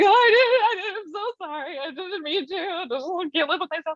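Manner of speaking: mock crying, high and tearful. Retelling a childhood apology after lying: imitating own past crying. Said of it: "five seconds before you were in my room crying".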